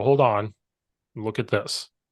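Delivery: ordinary talk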